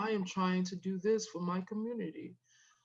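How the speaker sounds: mock dull, boring monotone. Mocking a dull local candidate's way of talking: imitating a boring talker. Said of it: "He talks like this".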